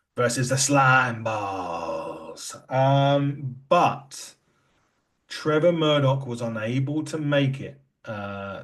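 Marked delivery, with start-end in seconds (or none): 0.2-2.6 the word "balls" drawn out at the end. Announcing the main event opponents: Carl Davis impression. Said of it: "I'm gonna do my best Carl Davis impression here".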